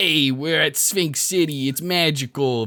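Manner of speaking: fake, slow, drawn-out put-on New York accent. Describing voicing a trailer for sphinx city, in a put-on new york accent. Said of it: "I put on a New York accent".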